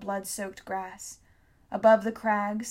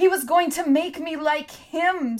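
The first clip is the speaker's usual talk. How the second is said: high-pitched, loud screamed outburst; 7 semitones higher, 6 dB louder than usual. Narrator reads Hester hugging Shrike and screaming at Tom. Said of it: "screamed Hester".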